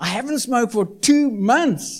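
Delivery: very excited, high, thrilled, blurted burst.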